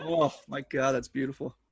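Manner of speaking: moved, choked-up, emotional voice welling up. Reacting to a story of a former student's thanks, getting emotional. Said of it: "I'm getting, like, super emotional about that right now".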